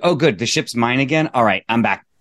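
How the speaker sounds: ordinary delivery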